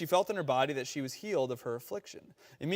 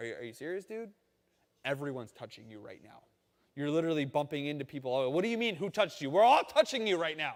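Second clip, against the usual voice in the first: lightly sarcastic tone. Retelling the disciples answering Jesus in the crowd: imitating sarcastic disciples. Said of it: "little sarcastic with Jesus there".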